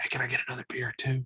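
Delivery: soft, hushed whisper under the breath. Describing ordering from a server in the dark: acting out a whisper. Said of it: "and then you gotta whisper".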